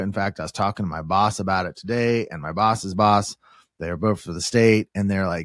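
normal talking voice

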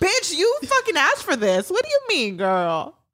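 sassy, high, wide mocking tone.

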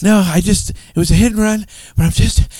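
winded, panting. Arriving late for the podcast, answering the host's question, out of breath. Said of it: "See, I'm out of breath".

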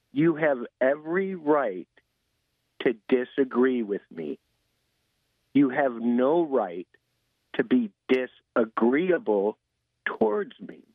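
slow, slightly drawn-out speech. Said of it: "maybe I'll talk a little bit slower".

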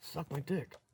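hushed whisper, very quiet and soft. Playing a character, whispering to the demon behind him: whisper. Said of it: "I whisper".

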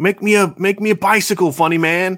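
put-on childlike shout. Retelling a Wedding Crashers scene as the little kid: imitating a kid yelling. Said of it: "why are you yelling at me?".

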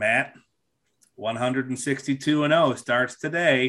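dry, flat, level, expressionless deadpan. Retelling what a coworker said every opening day: imitating a coworker's deadpan delivery. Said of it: "he was a deadpan guy anyway".

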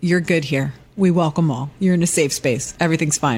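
normal talking voice

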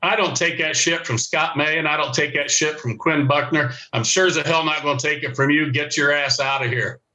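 plain

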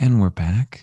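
silky, smooth late-night radio DJ voice. Showing how the podcast would sound as a radio show: smooth late-night radio host voice. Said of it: "as a radio show".

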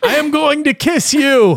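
very high-pitched shouting. Retelling a game scene, imitating Jordan yelling. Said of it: "Jordan in a game yelling".

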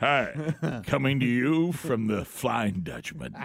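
slow, drawn-out radio announcer read.

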